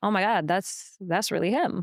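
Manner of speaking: ordinary delivery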